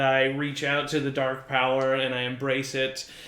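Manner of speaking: ordinary delivery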